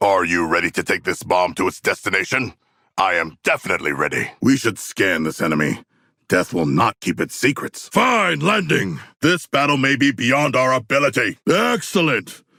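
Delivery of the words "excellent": heavy, very sarcastic, pitched up on a single word. Answering in character during a mission, one word: sarcastic. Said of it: "But I mean it very sarcastically".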